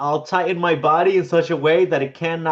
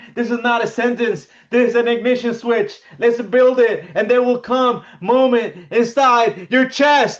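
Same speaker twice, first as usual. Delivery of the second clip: rousing, pitched-up motivational speaker voice with stage-style oratory; 8 semitones higher, 3 dB louder than usual. Reading short inspirational lines aloud: motivational voice. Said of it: "You have got that motivational voice".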